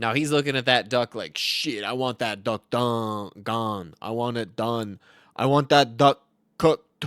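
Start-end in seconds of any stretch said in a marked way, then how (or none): 1.4-7.1 slow, drawling put-on streamer voice. Imitating a streamer looking at a duck, Perk thirty impression. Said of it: "That's an impression of Perk thirty".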